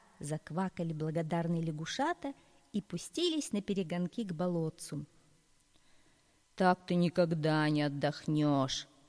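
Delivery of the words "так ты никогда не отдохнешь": creaking voice, lower, slower. One crane speaks to another crane after it rescues a frog: creaking. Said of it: "заскрипел один подъемный кран".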